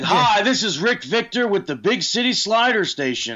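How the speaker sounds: very high-pitched TV ad pitchman voice. Watching a wrestling match, the speaker jokes, doing Rick Victor as TV pitchman. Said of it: "sounds like he would be somebody selling products on TV".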